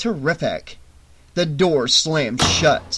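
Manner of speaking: ordinary delivery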